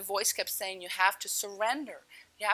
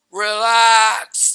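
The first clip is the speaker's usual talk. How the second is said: magnificent, very loud, booming, majestic, drawn-out voice; 16 dB louder than usual. Struggling to breathe underwater, the speaker retells a voice saying relax: booming majestic voice. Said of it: "this magnificent, booming, majestic voice goes".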